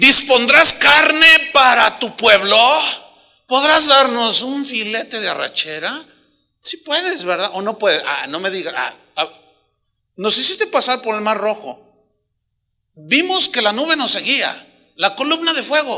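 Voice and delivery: loud, sarcastic, jeering, taunting tone. Acting out the people questioning God: imitating sarcastic questioning. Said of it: "Le siguen preguntando a Dios sarcásticamente".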